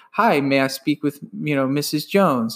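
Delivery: put-on, stiff, robotic delivery. Retelling his early sales calls, imitating his own robotic voice. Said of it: "it sounded so robotic".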